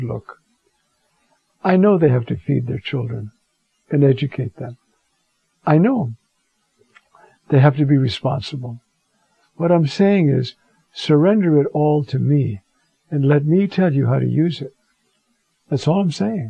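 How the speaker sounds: put-on calmest, kindest reassuring voice. Recounting an answer to prayer, the speaker retells it in a calm, kind voice. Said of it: "in the calmest, kindest voice".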